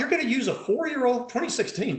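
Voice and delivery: quick, high sarcastic tone. Discussing tumor diagnosis criteria with Doctor Harb, sarcastic. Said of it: "do you like the sarcasm?".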